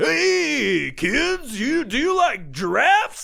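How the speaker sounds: weird, very high, creaky radio DJ patter. Mocking how radio DJs talk: imitating a weird radio DJ voice. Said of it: "this weird fucking voice that they all do".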